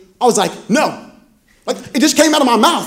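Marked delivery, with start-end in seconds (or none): none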